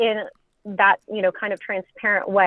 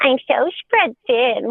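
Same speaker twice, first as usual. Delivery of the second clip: put-on full-on taunting baby-talk voice; 4 semitones higher than usual. Retelling how she mocked the speaker, in a mocking baby voice. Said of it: "like total like baby mocking voice".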